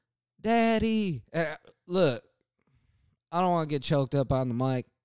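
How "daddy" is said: put-on high, loud child's yell. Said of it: "this kid yells".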